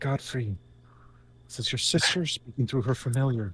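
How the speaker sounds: soft whisper, barely voiced. Speaking through a familiar to wake her brother: whisper. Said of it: "using her voice in a whisper".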